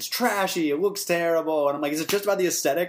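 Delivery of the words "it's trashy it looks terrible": acted, scolding, pissed-off parent yelling downward. Retelling a fight with mom over a hickey, imitating mom yelling. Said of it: "she was like yelling at me".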